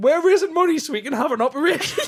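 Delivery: mock pleading appeal voice. Joking how the next line would have gone: mock charity appeal. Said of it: "it sounded like the next sentence was gonna be".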